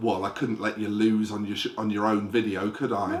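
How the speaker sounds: put-on, bone-dry, totally deadpan, low delivery. Retelling what she said to him out in the hallway, retelling a deadpan remark. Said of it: "deadpan as you like".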